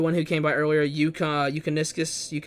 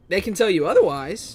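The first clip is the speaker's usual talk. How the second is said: cracked voice, breaking partway through; 3 semitones higher than usual. Giving an opinion on Dark Souls 2 players: voice cracking. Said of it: "My voice just cracked".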